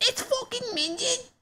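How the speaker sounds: very high-pitched put-on Cockney kid's voice. Repeating a kid's line from a clip, imitating a kid's cockney accent. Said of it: "It's a Cockney accent".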